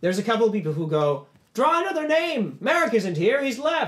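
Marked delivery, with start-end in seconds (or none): 1.5-3.9 high, loud yelling of a crowd. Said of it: "they start yelling".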